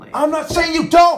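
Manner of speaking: very loud, shrill, high-pitched full-throated shout. In a family argument, answering the other person, yelling. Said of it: "Sorry for yelling".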